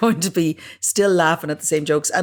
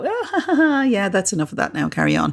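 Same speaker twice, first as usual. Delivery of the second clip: sing-song, slightly sarcastic, laughing it off. Showing how to brush off a partner's jokes: slightly sarcastic. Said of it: "be slightly sarky when you go".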